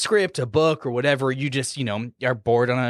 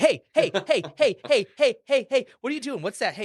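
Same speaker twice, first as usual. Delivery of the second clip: very high, tiny little gnome voice; 10 semitones higher than usual. Player acts a gnome illusionist pestering someone at lunch; little gnome voice. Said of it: "like a little gnome, like trickster illusionist".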